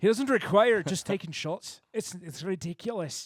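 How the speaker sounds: put-on Irish accent. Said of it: "You said that really Irish".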